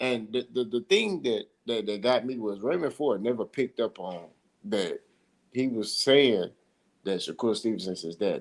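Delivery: normal talking voice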